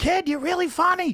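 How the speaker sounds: exaggerated, high, loud Boston accent. Retelling what the comedian you opened for said after your set, in Lenny Clarke's crazy Boston accent. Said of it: "like with that crazy Boston accent".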